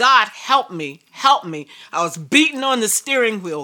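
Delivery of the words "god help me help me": acted tearful crying, slower. Recounting crying out to god at the steering wheel, retelling crying out. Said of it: "And I was just crying".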